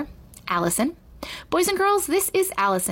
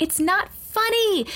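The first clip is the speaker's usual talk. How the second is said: shrill, very high, full-volume, all-out yell; 10 semitones higher than usual. A girl who fears the whole school is playing a joke on her, shouting as loud as possible. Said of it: "she shouted as loud as she could".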